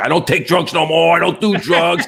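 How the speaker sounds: put-on wild, frantic, furious rant, high pitch. Retelling how the driver who hit the car reacted: imitating someone going ballistic. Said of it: "goes totally ballistic".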